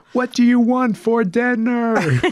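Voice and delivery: play-acted, very high, loud, drawn-out words. Retelling how a server spoke to deaf grandparents: imitating someone speaking louder and slower. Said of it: "louder and slower".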